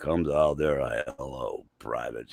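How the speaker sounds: rumbling, thundery, very deep drill-instructor voice. Retelling a drill instructor greeting new privates: imitating a James Earl Jones-like deep voice. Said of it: "just real thundery deep voice".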